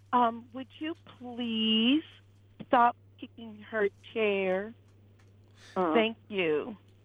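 mock condescending, talking-down tone. Speaker retells a man telling someone to stop kicking her chair, mock-talking down to a kindergartner. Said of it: "as if he was speaking to a kindergartner".

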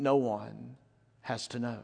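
slow, hushed, seductive, tempting half-whisper. Retelling what a woman said to a pastor: imitating a seductive half-whisper. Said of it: "whispered to him seductively".

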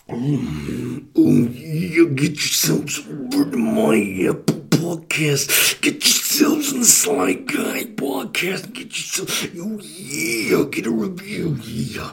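swooping wrestler voice. Plugging the podcast in a wrestler impression: Macho Man Randy Savage impression. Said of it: "I'm gonna give you Macho Man Randy Savage".

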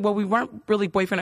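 ordinary talk, nothing marked

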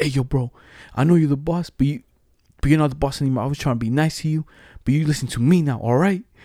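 acted, hot-headed, angry, heated delivery. Retelling a guy confronting the boss: imitating someone angry. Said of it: "all hot, all mad".

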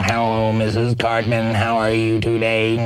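imitated electrolarynx robotic voice. Explaining throat amplifiers, imitating the South Park voice-box character. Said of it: "just like that one Hunter character from South Park".

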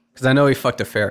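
ordinary talk

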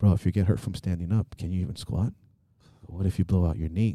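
soft half-whisper, very close and intimate. Retelling what an inner voice said after a knee tweak: imitating a half-whispering inner voice. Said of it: "and it's whispering".

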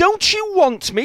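very high-pitched, goat-like bleating voice. Narrator reading a story, a man asking his boss whether to stay: bleating. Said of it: "Chinch bleated".

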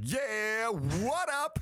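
funny, very high, swooping ad-lib. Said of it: "Maybe just funny ad libs at parties".

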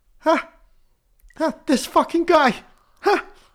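shrill, very loud, high-pitched belted outburst. Doing an impression after being given a celebrity: Andrew Santino doing Bill Burr. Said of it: "I can only do Andrew Santino doing Bill Burr".

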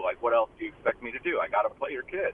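ordinary delivery

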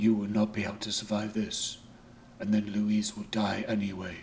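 grave, urgent, confidential, held-in tone. A character speaks to a companion in a taxi while the driver watches, lowered voice. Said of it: "so Shinnikan lowered his voice".

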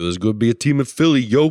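put-on Philadelphia accent. Joking about a team in philly: put-on philly accent. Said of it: "I don't think people feel from Philly talk like that".

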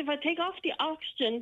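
ordinary talk, nothing marked

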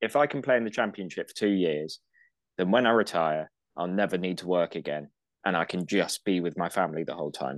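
ordinary talk, nothing marked

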